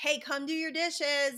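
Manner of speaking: loud, high yell called upward. Retelling calling up the stairs to a kid about dishes: imitating own yelling. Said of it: "I just yelled up the stairs".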